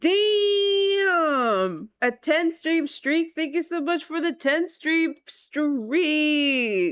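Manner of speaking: voice breaking and cracking high, "damn" drawn out. A streamer thanking a viewer for a ten-stream streak, voice cracking. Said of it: "my voice cracked".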